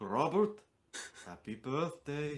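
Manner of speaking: put-on German accent. Retelling calling a brother on his birthday: imitating grandfather's German accent. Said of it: "I'd do his voice".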